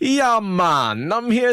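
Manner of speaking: bad Jamaican accent, high, slow and drawn out. Describing a book scene, the speaker acts out Nynaeve's bad Jamaican accent. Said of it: "like a bad Jamaican accent where she's like".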